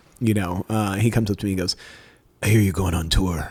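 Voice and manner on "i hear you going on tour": super deep, low voice. Retelling what the man he was avoiding said to him: super deep Batman-like voice. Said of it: "super deep voice like that".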